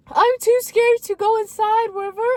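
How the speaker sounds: put-on tearful sobbing wail, very high, very loud. Retelling a sister's call after a prank: imitating crying. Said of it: "She's crying, she's crying".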